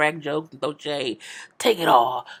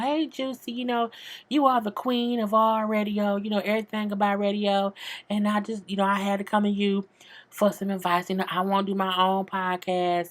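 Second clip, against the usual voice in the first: put-on sugary, sweet, fake-nice voice; 4 semitones higher than usual. Recapping Minnie going to Juicy for advice, Minnie's put-on nice voice. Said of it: "she had put her her nice voice on".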